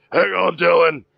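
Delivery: high yell in a put-on character voice. Playing a character who yells out to an ally: yelling in character. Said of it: "Bruce yells out".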